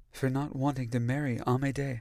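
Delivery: gently spoken, soft, hushed, quiet voice. First-person narrator answering Hyacinth's soft question, equally soft. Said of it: "equally soft".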